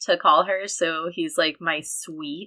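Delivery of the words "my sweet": laced with heavy sarcasm. Retelling how Kai greets Levana: imitating Kai's sarcastic tone. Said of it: "He's so sarcastic".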